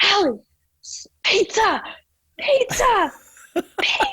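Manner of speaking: very high, drawn-out shout at full volume. Retelling her dad yelling at her while teaching her to ski, imitating dad yelling. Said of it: "he's like yelling at the top of his lungs".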